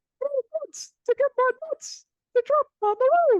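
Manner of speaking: very high-pitched, squeaky voice. Speaker repeats Ken Caminiti's quote in his voice: Ken Caminiti impression. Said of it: "maybe I should talk like Ken Caminiti now".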